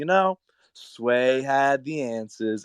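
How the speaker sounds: odd, spacey, dreamy drawl, very slow. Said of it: "and this like weird dreamy voice".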